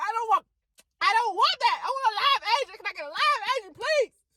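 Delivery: fed-up, shrill, very high hollering. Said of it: "I was just hollering".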